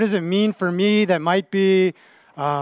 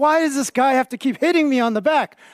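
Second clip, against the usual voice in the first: frustrated, fed-up, high, angry outburst; 6 semitones higher than usual. Retelling a story, quoting someone's reaction to repeated pats: imitating an angry complaint. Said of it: "he's so angry".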